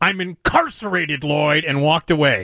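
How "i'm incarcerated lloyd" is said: acted-out, put-on scream. Retelling how a stranger in a bar came up and screamed, retelling a scream. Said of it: "a guy came up to me and just screamed".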